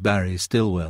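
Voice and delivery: ordinary talk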